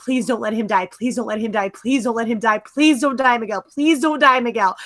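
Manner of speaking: put-on, rushed, desperate pleading over and over. Recalling fearing Miguel would die, retelling begging and pleading with the screen. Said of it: "begging and pleading with my screen".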